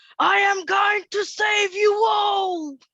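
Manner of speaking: shrill, very high, very loud yell. Playing a character kicking in a door and starting to shoot: in-character yell. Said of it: "And then I'm gonna yell".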